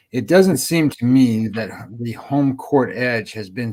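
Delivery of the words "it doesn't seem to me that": ordinary delivery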